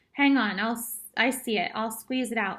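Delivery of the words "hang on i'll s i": usual speaking voice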